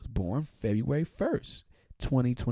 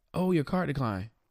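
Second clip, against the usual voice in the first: put-on careless, disrespectful, blunt, tactless tone; 4 semitones higher than usual. Retelling the guy at the restaurant announcing the decline, imitating him loudly. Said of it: "Why are you so loud?".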